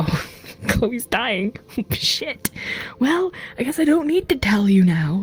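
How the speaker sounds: high, rueful, laughing whisper.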